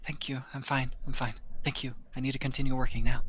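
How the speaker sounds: soft whispered voice. Game master voicing a circus worker answering a player, whispering. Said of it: "And she's whispering it to you".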